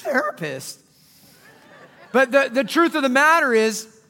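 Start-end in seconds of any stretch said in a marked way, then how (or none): 0.0-0.8 put-on "therapist" said in a young teenage voice. Suggesting someone call their therapist: junior high voice on 'therapist'. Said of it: "I usually say it with a junior high voice like that".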